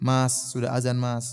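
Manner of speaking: tender, soft, gentle coaxing voice. Showing how to wake a husband for dawn prayer: gentle, soft manner. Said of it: "dengan cara yang lembut".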